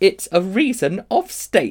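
cutting, spiteful, very high and slow. Polly answers the witch who begs to be taken along, spiteful. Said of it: "said Polly spitefully".

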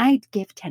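mock smug, self-satisfied, pleased-with-herself tone. Retelling how she answered a donation request at the airport, retelling her smug reply. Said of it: "And I would so smugly go".

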